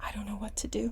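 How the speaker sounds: very quiet, soft, breathless whisper.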